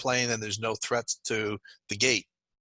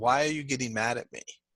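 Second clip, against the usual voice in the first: put-on, imitated tearful voice. Retelling the wife's reply to a remark: imitating a tearful wife. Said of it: "with tears in her eyes saying".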